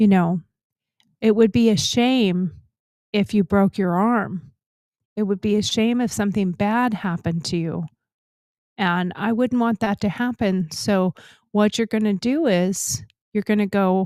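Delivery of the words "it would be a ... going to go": very quiet, soft, calm, gentle voice. Acting out someone who makes a veiled threat: very quiet, calm gentle voice. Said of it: "says very quietly".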